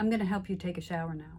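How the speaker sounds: steady, reassuring, very calm, even caregiver tone. Sitting next to mom, holding her hand, offering shower help in a very calm voice. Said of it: "I said in a very calm voice".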